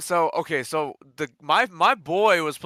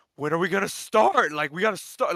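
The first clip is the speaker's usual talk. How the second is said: acted-out urgent, pushy, impatient yelling; 3 semitones higher than usual. Retelling how he yelled at the official to start: imitating someone yelling. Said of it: "Like he's over here yelling at him".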